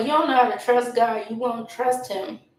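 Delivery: normal talking voice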